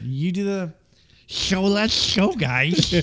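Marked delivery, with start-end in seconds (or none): 1.3-2.9 slow, drawn-out cartoon sloth character voice. Showing how the other speaker does Sid the Sloth. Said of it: "you can do Sid the Sloth".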